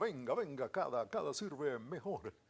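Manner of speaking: selling radio ad announcer voice. Re-creating an old ad line voiced as Bardazano: Bardazano ad voice. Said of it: "le ponía la voz mía a Bardazano".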